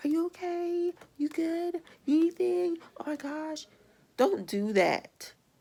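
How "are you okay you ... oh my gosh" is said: put-on high-pitched, patronizing, fussing baby talk. Retelling how people talk to the speaker: imitating someone talking to a baby. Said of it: "talk to me like I'm a, a baby".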